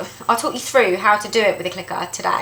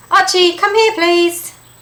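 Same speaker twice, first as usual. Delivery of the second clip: exasperated, very high-pitched, loud calling voice; 10 semitones higher, 6 dB louder than usual. Demonstrating calling back a dog that won't come, in a frustrated voice. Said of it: "my frustrated voice".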